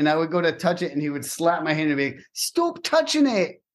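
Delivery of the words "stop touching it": very high-pitched, scolding chef voice. Recounting someone slapping their hand away, the speaker quotes him: Gordon Ramsay impression. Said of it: "That's my Gordon Ramsay impression".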